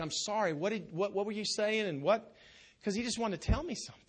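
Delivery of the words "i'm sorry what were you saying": acted, put-on apologetic tone. Speaker retells answering a call after misreading the caller's name: retelling an apology. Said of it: "I'm like apologetic".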